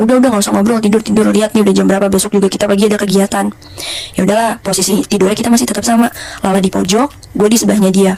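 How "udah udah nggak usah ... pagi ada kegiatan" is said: usual speaking voice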